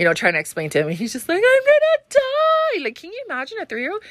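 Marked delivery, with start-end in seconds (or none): 1.4-2.8 put-on very high, panicked, drawn-out child scream. Retelling a three-year-old's anxiety attack in the car: imitating a child screaming. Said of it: "screaming at the top of his lung".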